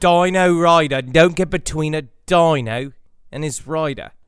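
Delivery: imitated Australian accent. Trying out a practice sentence as an accent warm-up, in a put-on Australian accent. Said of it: "warm up before doing the Australian accent".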